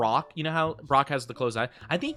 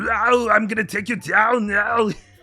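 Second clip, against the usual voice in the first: bad, hammy silly voice, high and loud; 7 semitones higher, 7 dB louder than usual. Retelling a dubbed card monster's line: Arnold Schwarzenegger impression. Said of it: "the funniest Arnold Schwarzenegger impression I've ever heard".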